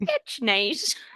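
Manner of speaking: put-on sweet, oblivious, gummy, toothless little old man voice. Retelling a film scene, quoting the old man: imitating a smiling toothless old man. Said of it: "smiling, toothless old man where he's like".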